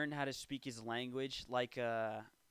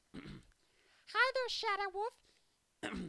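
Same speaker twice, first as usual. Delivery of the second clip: very high, furry, squeaky puppet voice. Speaker performs a favorite voice while others score impressions; Elmo voice. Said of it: "This is my favorite voice".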